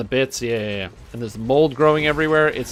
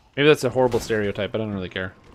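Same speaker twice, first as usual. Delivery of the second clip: usual speaking voice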